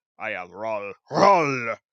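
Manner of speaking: very loud, very slow, booming, drawn-out put-on anger. Showing how a good German name should sound: mock angry voice. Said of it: "should sound angry".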